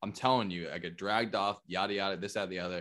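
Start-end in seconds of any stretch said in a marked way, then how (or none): none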